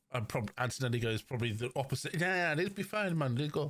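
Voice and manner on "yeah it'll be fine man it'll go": terrible fake Italian accent, pitched up. Recapping what drivers said, voicing Antonelli's reply: Antonelli impression, terrible Italian accent. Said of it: "that was a terrible Italian accent".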